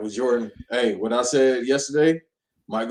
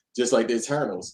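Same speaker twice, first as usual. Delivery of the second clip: normal talking voice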